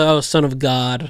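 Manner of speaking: normal talking voice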